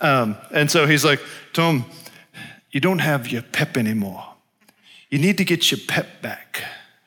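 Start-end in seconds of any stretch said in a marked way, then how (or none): 1.5-6.6 put-on Zimbabwean accent. Retelling what a Zimbabwean man said to him, in a Zimbabwean accent impression. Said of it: "I'm trying his accent".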